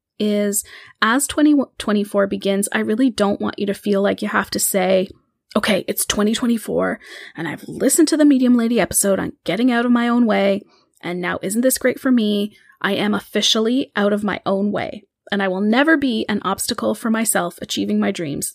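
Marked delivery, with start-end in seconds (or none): none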